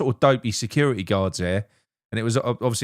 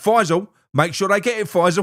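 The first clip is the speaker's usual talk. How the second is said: pushy, hectoring, aggressive, insistent tone; 8 semitones higher, 5 dB louder than usual. Retelling a man pointing and pushing a petition: imitating an aggressive man. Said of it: "He was going like that".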